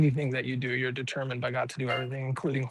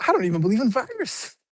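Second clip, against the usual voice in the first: mock forceful, emphatic, loud, pitched-up, vigorous delivery; 9 semitones higher, 5 dB louder than usual. Echoing how COVID just said it, imitating COVID's vigorous delivery. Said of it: "says that with like such vigor".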